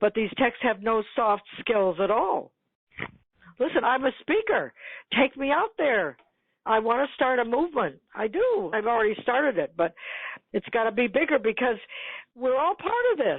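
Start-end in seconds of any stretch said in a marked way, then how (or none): 3.6-13.4 passionate voice, raised and pitched up, building and swelling. Speaker makes her pitch to listeners, in a raised passionate voice. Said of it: "you can hear my voice raising".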